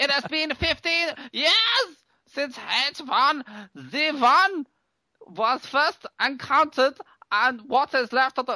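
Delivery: put-on speaking in German accent. Reading aloud a written message, in a German accent.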